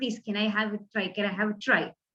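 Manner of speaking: low, soft, begging tone.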